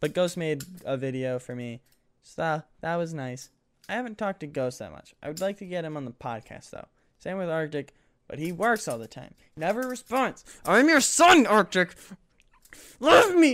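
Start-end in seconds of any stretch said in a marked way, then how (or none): 10.6-13.5 fake emotional outburst, very high, very loud, shrill, drawn-out. Begging an absent friend for attention, mock emotional plea. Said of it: "I got a bit emotional".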